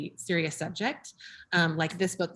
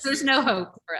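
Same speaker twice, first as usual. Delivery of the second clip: loud high mock-despairing voice. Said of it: "And I was like".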